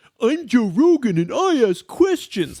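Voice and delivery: mocking stupid voice, high and slow. Mocking a post as talking in a stupid voice: mocking stupid voice. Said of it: "having a conversation in a stupid voice".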